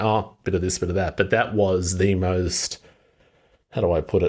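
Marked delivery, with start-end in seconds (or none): none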